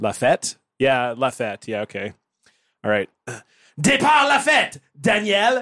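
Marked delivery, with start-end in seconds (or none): 3.8-5.6 shrill, furious, very high, angry French accent. Asked by another speaker to do an angry french voice, addressing daniel: angry french voice. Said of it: "Do an angry French voice".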